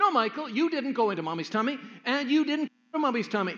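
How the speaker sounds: confident big-sister voice. Retelling a six-year-old correcting her brother: imitating a confident older sister. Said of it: "Very confidently and older sisterly-like".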